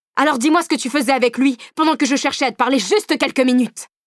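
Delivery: sudden, violent, high-pitched shout. A narrator reads a man demanding answers from the narrator, shouting violently. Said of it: "Cria-t-il avec une violence que je ne lui connaissais pas".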